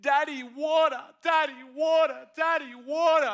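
put-on child's high, loud, drawn-out, repeated calling yell. Recounting being woken at night, imitating his son yelling. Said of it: "I heard my son just yelling".

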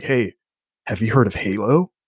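excited, eager, acted-out voice. Retelling what a friend asked at his house: imitating an excited friend. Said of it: "And he's so excited".

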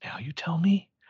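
under the breath. Retelling a scene where she answers him, retelling a hushed line. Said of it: "She says in a hush".

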